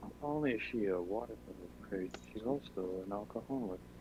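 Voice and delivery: very soft, muttered under the breath. Speaking in character about a companion, hoping she won't hear: muttering under his breath. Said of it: "mutter this under his breath".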